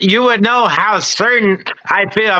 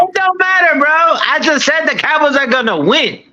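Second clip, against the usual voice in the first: raised, pitched-up, insistent voice; 7 semitones higher than usual. Insisting in a disagreement that the Cowboys will win: raised voice. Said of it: "Why are you raising your voice?".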